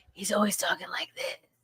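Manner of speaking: breathy near-whisper, very quiet. Complaining about an actor she can't stand: Steven Seagal whisper impression. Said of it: "He always sounded like he was whispering".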